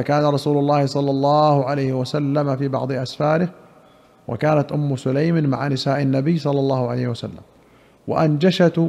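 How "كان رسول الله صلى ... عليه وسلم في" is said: plain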